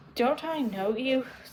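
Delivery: soft, hushed, murmured witch voice. The witch speaks to the lion at Dorothy's side, in a low voice. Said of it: "said the witch in, in a low voice".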